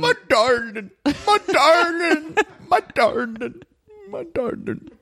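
mock elderly Irish male voice. Ryan and Jonathan's invented couple voice for each other, an old Irish man voice. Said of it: "Ryan and Jonathan have invented like an old Irish man".

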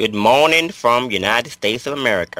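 Southern US accent. Saying hello after being introduced: put-on almost Deep South accent. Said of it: "You went almost deep south with that accent".

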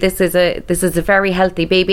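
ordinary talk

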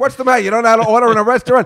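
loud yelling. Retelling yelling at a man's mother-in-law about ordering in a restaurant, reenacting own yelling. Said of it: "I was yelling at his mother-in-law".

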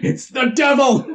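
high, raving, ranting yell. Retelling how a man yelled while destroying snowmen, retelling a yell. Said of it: "he keeps yelling about how".

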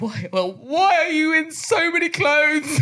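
play-acted, very high, crying, tearful wail. Retelling how a rejected date reacted, imitating someone crying. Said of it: "he was crying, and he was like".

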